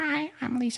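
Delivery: goofy, very high-pitched voice. Asked to impersonate a friend, imitating Lisa. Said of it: "will you please impersonate your friend?".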